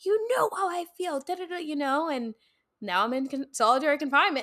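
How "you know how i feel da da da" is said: furious, very high, angry shrieking scream. Retelling the day he found the letter and screamed at the speaker, retelling a scream. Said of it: "screaming at me".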